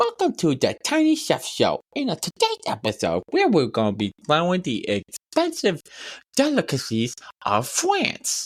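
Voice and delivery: high, swooping, horrendous lisping cartoon voice. Imitating someone introducing a show, the speaker uses a cartoon voice with a lisp. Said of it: "he has this horrendous voice where it's like Cartman but with like a lisp".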